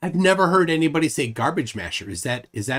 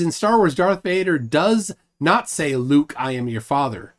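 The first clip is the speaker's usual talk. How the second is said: ordinary talk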